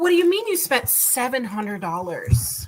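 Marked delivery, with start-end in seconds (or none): none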